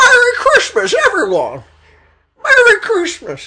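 very high, swooping, drawn-out, sing-song cheer. Doing a Jimmy Stewart impression the other speaker rejects. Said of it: "That was definitely not Jimmy Stewart".

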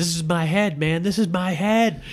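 high, mock furious, angry screaming. Retelling a weird movie, act out the man who comes out angry, imitating someone screaming. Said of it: "he screams".

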